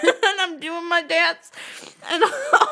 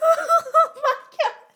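very high voice, giggling and laughing through it; 10 semitones higher than usual. Recalling a drive-thru incident with another speaker, laughing while talking. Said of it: "I can't stop laughing".

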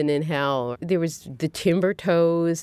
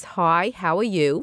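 put-on Brooklyn accent. Showing how she talks to her cousin on the phone: Brooklyn accent. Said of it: "suddenly you're talking like this".

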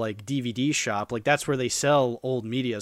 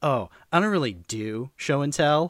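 put-on sarcastic, sleazy boy voice; 2 semitones higher than usual. Retelling what a boy said at show and tell, imitating Nick, sarcastic and sleazy. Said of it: "how he's just so sarcastic and sleazy".

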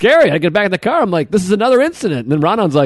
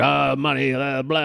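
unhinged, slow, rough rambling babble; 3 semitones lower, 8 dB quieter than usual. Retelling waiting for a ride outside at night: imitating a crazy homeless guy. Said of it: "a crazy homeless guy standing there being like".

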